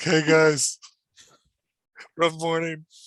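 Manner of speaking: slow, loud, fake drunken slur. Joking about being drunk by the ten o'clock meeting: fake drunk slurring. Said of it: "that you're a little slurry".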